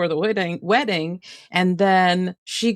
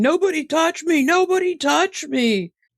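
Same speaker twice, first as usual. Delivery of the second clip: high-pitched, drawn-out screaming; 9 semitones higher than usual. Retelling a reality show scene: imitating someone screaming. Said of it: "running around the parking lot screaming".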